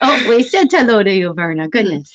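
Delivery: ordinary talk, nothing marked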